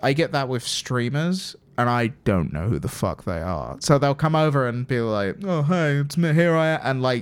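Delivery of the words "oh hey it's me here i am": put-on self-important tone with attitude, higher. Imitating streamers who walk over acting important: someone with an attitude. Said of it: "with an attitude on 'em".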